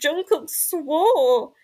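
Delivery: mock very loud panicked speech, one word drawn out. Retelling telling mum the news: imitating own past freaking out. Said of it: "And I was like".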